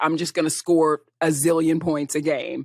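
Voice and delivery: ordinary talk, nothing marked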